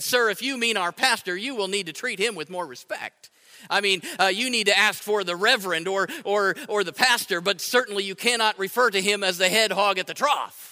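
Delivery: ordinary talk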